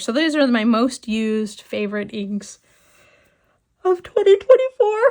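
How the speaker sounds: words stretched through a yawn. Speaker presenting favorite inks to an audience, yawning while talking. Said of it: "I'm so sorry I'm yawning".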